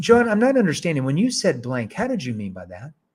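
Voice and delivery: curious, inquisitive, probing tone. Example sales-process question to john, asked in a curious tone. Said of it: "That's a curious tone".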